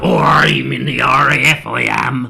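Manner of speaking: very loud, very slow West Country drawl. Retelling how a friend sounds down in Dorset: imitating Ernie's West Country accent. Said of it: "real country now".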